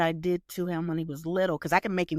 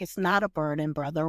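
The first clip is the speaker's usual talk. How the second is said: plain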